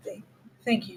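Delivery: barely-there, very quiet, hushed whisper. Voicing a character thanking another after a hug: whispering very quietly. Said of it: "whispers very quietly".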